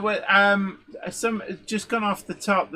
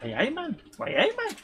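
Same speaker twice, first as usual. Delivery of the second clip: high, put-on Geordie accent; 5 semitones higher, 3 dB quieter than usual. Recalling the first words out of her mum's mouth, imitating mum's Geordie accent. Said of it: "No, no, it's like".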